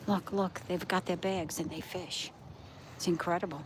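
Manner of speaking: hushed whisper. Pointing out the people fishing on the shore, whispering. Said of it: "I'm whispering".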